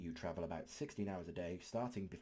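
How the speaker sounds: plain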